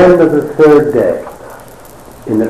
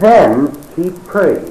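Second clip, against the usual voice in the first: "then" emphasized, slow and high-pitched. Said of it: "the scripture says very emphatically".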